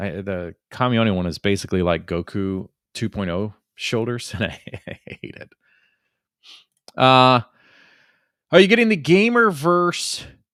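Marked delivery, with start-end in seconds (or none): 7.0-10.2 slightly stoner-like voice, pitched up. Speaker asks a question about the Gamerverse, kind of like a stoner. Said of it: "I said that in a way that was kind of like stoner a little bit".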